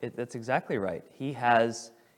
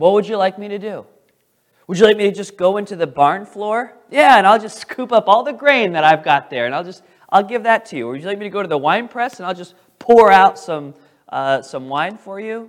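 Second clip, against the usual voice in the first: booming, heavy, loud sarcasm, pitched up; 7 semitones higher, 10 dB louder than usual. Retelling the king's answer to a woman's plea, imitating a sarcastic king. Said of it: "and then he speaks sarcastically".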